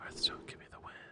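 very quiet, sultry, sensual, seductive whisper. Pleading with a game to give the win, in a sultry, sensual whisper. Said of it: "If we whisper to it like that, all sultry, sensual".

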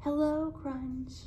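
faint, too-soft, very quiet, barely there. Saying hello to Crunch, told to try it quietly so as not to scare him: too quiet. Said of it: "that was too quiet".

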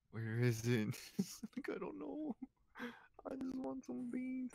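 whiny mock sobbing, very high and hushed. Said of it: "Why are you crying?".

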